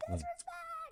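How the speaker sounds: put-on shouting. Retelling yelling at cosplayers on the show floor: retelling own yelling. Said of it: "I'm yelling at half these people".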